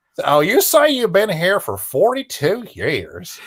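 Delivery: put-on high Southern-accented TV interviewer voice. Imitating the host interviewing old people in diners: Huell Howser voice. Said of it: "he had a Southern accent".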